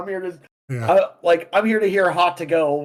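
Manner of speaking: acted, snarky, sarcastic tone. Acting out a reply to someone at a rock show: acting out a sarcastic reply. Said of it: "it should just be sarcastic".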